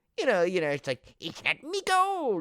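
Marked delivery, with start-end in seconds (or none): 1.2-2.4 very high, slow, stock leprechaun brogue. Describing how a movie leprechaun was expected to sound: stereotypical leprechaun voice. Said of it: "the voice of the leprechaun".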